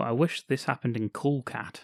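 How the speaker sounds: usual speaking voice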